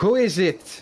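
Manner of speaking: very high calling out. Voicing someone behind a door who hears visitors: voice calling out. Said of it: "you hear a voice call out".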